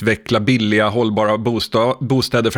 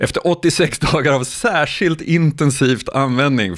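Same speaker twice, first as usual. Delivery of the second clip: words broken up by laughter while talking; 4 semitones higher than usual. Recounting a story about a man and ChatGPT, laughing while speaking. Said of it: "förlåt jag skrattar".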